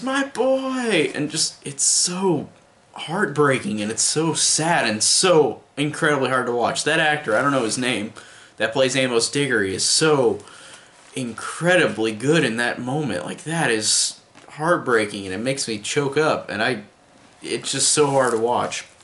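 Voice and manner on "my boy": very high, anguished scream. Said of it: "he just screams".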